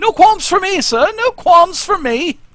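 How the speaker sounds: awful put-on English accent, shrill and very high. A character at the back answers a man's order, in a bad english accent. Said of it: "that is the worst English accent".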